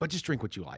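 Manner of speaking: poorly faked, put-on German accent. Retelling what a man said at the end of his explanation, in a German accent. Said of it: "and that's my German accent".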